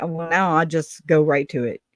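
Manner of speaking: ordinary talk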